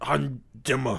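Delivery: put-on caveman voice. Challenged to do their caveman, the speaker puts on a caveman voice. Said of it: "Do your caveman?".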